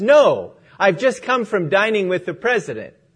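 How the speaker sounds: play-acted tongue-in-cheek sarcastic tone. Retelling a story, a homeless man answering a woman's offer: imitating sarcasm. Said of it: "he sarcastically says".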